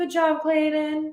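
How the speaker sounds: sweet high voice. Recapping a show where a woman responds to Clayton; Michelle's sweet voice. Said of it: "her sweet voice just being like".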